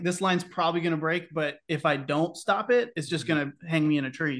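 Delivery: ordinary talk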